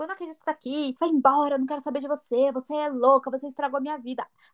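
blustering macho rant, reined in. Retelling how he reacted outside after she arrived: imitating a man yelling. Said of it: "ele começou a gritar e fazer o macho".

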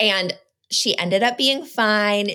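normal talking voice

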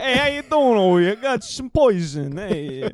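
high-pitched, fake New Jersey guy accent. Retelling Romeo and Juliet, doing the priest in a mock New Jersey accent. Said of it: "He is some bald fuck from New Jersey".

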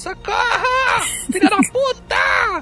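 play-acted madwoman screaming, very high, very slow, drawn out. Imitate the actress dubbing the vampire in the film, Fernanda Fernandes screaming like a madwoman. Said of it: "Que ela grita, feita uma maluca".

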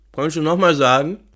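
talking with mouth full. Asking the other host to repeat the email address, talking with mouth full. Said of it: "Ich habe noch den Mund voll".

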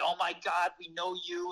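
classic put-on New York accent. Retelling a couple treating a visitor like family: New York accent. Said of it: "classic New Yorkers with the New York accent".

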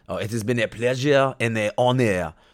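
over-the-top, exaggerated French accent. Quoting characters' words to each other before being petrified, in an offensive French accent. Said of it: "as I do my even more offensive French accent".

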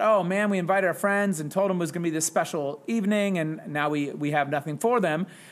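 ordinary talk

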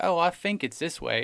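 th sounded as f. Imitating a movie character's accent: accent swapping th for f. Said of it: "this accent where he will replace TH sounds with F sounds".

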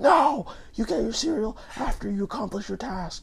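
mock very high-pitched screaming voice. Acting out a father answering his crying kid, retelling a dad screaming. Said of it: "he's just screaming at them, like".

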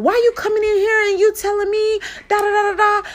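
high, angry yelling.

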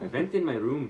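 fake British accent drifting Irish. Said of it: "That's Irish".

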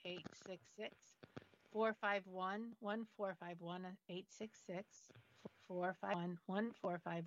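slow, deliberate, each digit spaced out one by one. Giving the call-in number for the show, saying it slowly. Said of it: "I'm gonna say it slowly".

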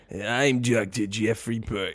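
very bad put-on cheesy host voice, slow, drawn out.

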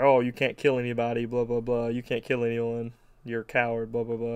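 plain

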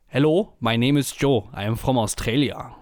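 put-on thick German accent. Retelling how a man introduced himself as a surfer type, very German accent. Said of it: "in dem deutschesten, deutschen Akzent".

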